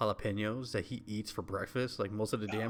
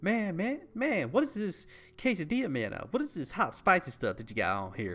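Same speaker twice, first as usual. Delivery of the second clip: put-on, high, swooping Southern accent; 8 semitones higher, 4 dB louder than usual. Retelling a comedian's bit about spicy food: southern voice. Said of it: "for some reason in a Southern voice".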